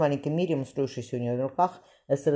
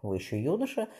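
ordinary delivery

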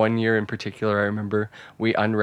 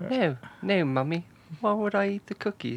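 put-on very high small-child, little boy voice; 10 semitones higher, 4 dB quieter than usual. Acting out his childhood self answering his mum, in a little boy voice. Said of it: "in your little boy voice".

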